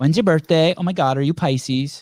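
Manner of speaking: exaggerated put-on sixteen-year-old teen girl accent. Mocking a bad podcast interviewer, put on a 16-year-old girl accent. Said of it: "That like 16-year-old girl accent".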